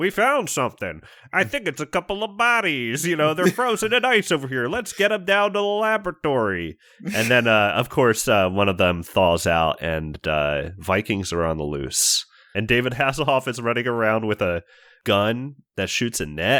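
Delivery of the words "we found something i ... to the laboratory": very high voice sounding like radio chatter. Describing an episode's opening, imitating the radio chatter: radio voice. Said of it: "it's just like radio voices being like".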